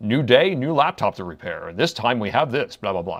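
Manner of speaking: quick-fire, fast announcer voice patter. A video maker shows the voice he uses in his shorts, announcer voice. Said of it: "I do my announcer voice".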